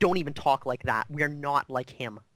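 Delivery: sharp, snapping, reproachful tone. In a role-play, voicing a character who snaps at another player, snapping sharply. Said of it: "she like snaps at you".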